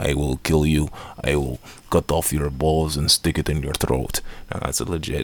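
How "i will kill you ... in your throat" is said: put-on hammy Russian gangster accent. Retelling a big Russian mob guy's line from a film, in a cheesy Russian mob accent. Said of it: "big Russian mob guy".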